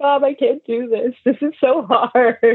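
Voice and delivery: acted-out weepy, tearful crying voice. Retelling a call to mom before a first race: retelling own past crying. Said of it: "And I was, like, crying".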